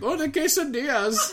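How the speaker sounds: bad accent that sounds Indian. Retelling how a man read Spanish menu words to be funny, bad accent that sounds Indian. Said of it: "Every accent he tries to do sounds Indian".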